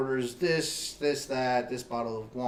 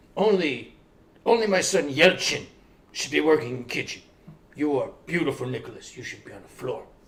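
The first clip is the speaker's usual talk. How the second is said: attempted put-on Greek accent, laid on thick; 6 dB louder than usual. Retelling what the man who moved the speaker to the front said, put-on Greek accent. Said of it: "I have no idea if that's a Greek accent".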